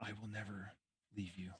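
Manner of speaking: faint, very soft, barely-there half-whisper. A voice speaks to a dreaming character in a game, in a half-whisper. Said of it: "you hear a whisper".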